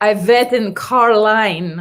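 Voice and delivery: deliberate, slow, fake Russian accent. Answering a question about a middle school bully, in put-on russian accent. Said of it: "I wrote in Russian accent".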